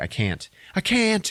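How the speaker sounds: acted freaked-out panic, very high, very slow, drawn out. Retelling a film scene, her refusing to jump: imitating someone panicking. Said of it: "She freaks out".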